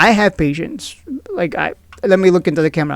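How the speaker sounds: usual speaking voice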